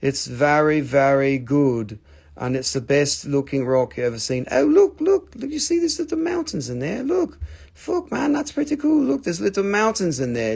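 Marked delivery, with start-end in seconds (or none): 0.0-2.0 fake English accent, very slow and drawn out. Describing a rock for sale in a put-on english accent. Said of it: "in my English voice".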